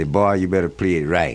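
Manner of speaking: plain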